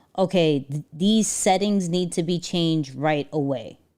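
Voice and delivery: ordinary talk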